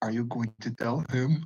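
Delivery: half-whisper, close, secretive and hushed. Describing kneeling down to a character's level, half-whispering into her ear. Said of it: "and just whisper into her ear".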